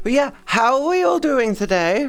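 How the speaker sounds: very high voice that cracks. Greeting everyone, voice cracking. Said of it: "my voice cracked a little".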